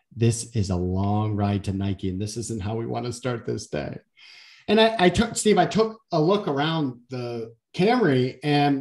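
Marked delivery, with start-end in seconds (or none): 0.2-4.0 put-on whisper, lower pitch. Retelling a car ride, acting out the assistant's words: imitating someone whispering. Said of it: "my assistant kind of whispers in my ears".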